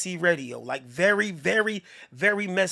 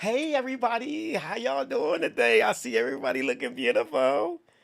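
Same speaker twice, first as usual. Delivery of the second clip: higher, welcoming stage-host voice hailing loudly; 5 semitones higher than usual. Mocking the other speaker's usual stage greeting: imitating Shelly's greeting. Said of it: "you'd have went to your old ways".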